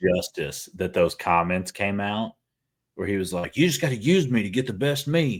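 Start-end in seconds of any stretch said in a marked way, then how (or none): 3.6-5.4 put-on botched, sloppy, pitched-up Australian accent. Quoting a pitcher's comments: Hendricks impression in botched Australian accent. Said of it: "pretend that was an Australian accent, not a Southern accent".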